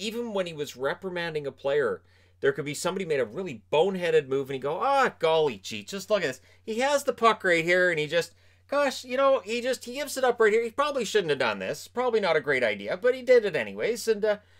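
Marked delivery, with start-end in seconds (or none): 4.8-14.1 put-on cheery, gee-whiz, jubilant, swooping high play-by-play. Imitating him describing a player's boneheaded move: imitating a jubilant tone. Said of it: "he's doing it in such a jubilant tone".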